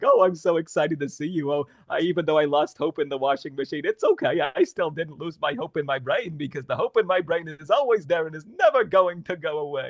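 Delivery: playful, silly, goofy cartoon-character chatter. Demonstrating a possible voice for a fun-loving character, silly cartoony voice. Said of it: "he can talk like this".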